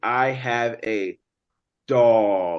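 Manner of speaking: heavy, slow, drawn-out stress on dog. Showing how to emphasize a word when speaking: stress on dog, said slowly. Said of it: "I wanted to emphasize the word dog... I said it in a slow way because I'm emphasizing it".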